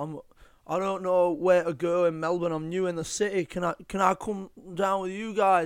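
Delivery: put-on poorly done Manchester accent. Act out a man new in melbourne asking to come along, in a bad manchester accent. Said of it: "the Manchester accent".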